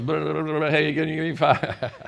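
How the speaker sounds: slow, silly, hammed-up auctioneer voice. Telling listeners about an auction, doing the auctioneer's call in a silly auctioneer voice. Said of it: "I can't help but act silly when I do that".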